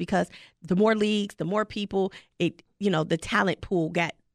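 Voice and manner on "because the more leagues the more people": plain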